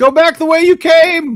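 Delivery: very loud, high, shrill ringing shout. Voicing a guard on a wall warning approaching travelers: voice ringing out. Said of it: "a voice rings out".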